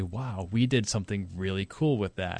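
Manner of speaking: ordinary talk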